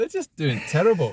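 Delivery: terrible fake Scottish accent, high-pitched. A speaker discussing football results says this in a bad Scottish accent. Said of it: "That's my worst Scottish accent as well".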